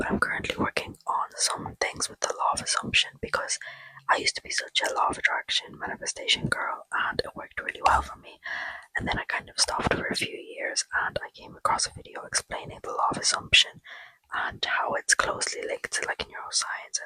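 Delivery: hushed whisper. Talking to viewers while everyone in the house is asleep: whispering. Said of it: "I'm gonna whisper because everybody in the house is asleep".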